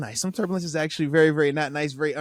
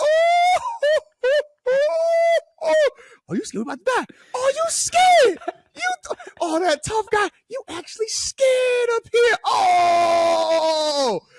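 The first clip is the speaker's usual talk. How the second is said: very high, drawn-out, teasing taunting mockery of fear. Retelling teasing a big muscled man who is sweating on a shaky plane: mocking a scared tough guy. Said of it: "you be like".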